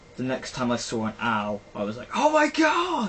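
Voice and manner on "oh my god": very high, loud, slow freaked-out shriek. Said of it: "freaked out".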